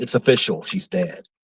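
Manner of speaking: hushed, whispered aside. Retelling a remark to his wife beside a closed coffin: retelling a whisper. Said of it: "I kinda whispered".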